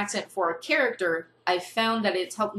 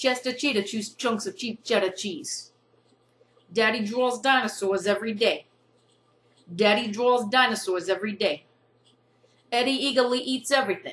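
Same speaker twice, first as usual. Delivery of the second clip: imitated New York accent; 2 semitones higher than usual. Attempting the same tongue twisters again, put-on New York accent. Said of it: "here is my attempt to do the same tongue twisters with this New York accent".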